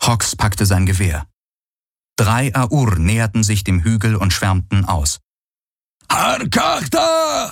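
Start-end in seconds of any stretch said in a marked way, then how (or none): 6.1-7.5 very high, rasping, rough bellowing roar. One of three Aur fanning out around the hill calls out; roared. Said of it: "Brüllte einer von ihnen".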